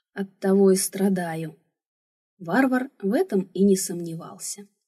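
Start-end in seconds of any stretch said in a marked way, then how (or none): 0.2-1.6 quieter, softer, lowered voice. After insisting she always tells the truth, she adds to a giant: quieter. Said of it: "уже тише добавила".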